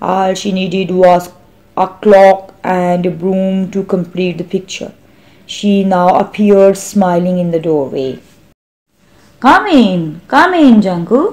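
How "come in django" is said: pleasant, cheery, jovial, friendly voice. A woman smiling in her doorway welcomes a visitor, jovially. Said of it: "she said jovially".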